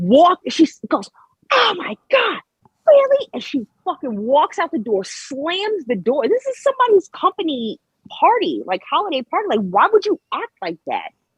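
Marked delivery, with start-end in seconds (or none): 1.5-3.3 mock, very high-pitched, furious full tantrum. Retelling a wife's reaction at a party: imitating someone throwing a fit. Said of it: "She literally threw a fucking fit".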